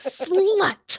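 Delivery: hard, aggressive, very high-pitched delivery. Imitating how Ivy says one word on the show: Ivy saying it hard. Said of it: "she says it so hard".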